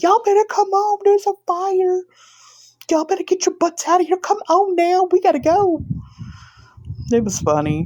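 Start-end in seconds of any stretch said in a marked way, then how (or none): 0.0-5.8 very high, put-on screaming. Recounting telling everyone to get out during a fire, retelling own screaming. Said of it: "I was screaming. I said".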